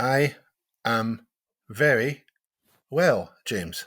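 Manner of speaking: very slow, halting, broken mid-phrase. Answering a podcast welcome greeting, speaking very slowly. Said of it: "speaking slowly".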